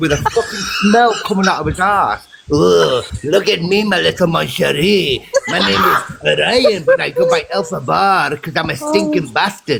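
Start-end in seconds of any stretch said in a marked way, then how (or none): 2.5-9.8 rough, creaky cartoon skunk voice. Mocking someone by comparing him to a cartoon skunk: Pepe Le Pew voice. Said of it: "he was like that cartoon character, Pepe Le Pew".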